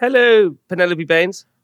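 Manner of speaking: radio announcer voice. Greeting mum at the start of a phone call: radio presenter voice. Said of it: "You got your little radio voice on".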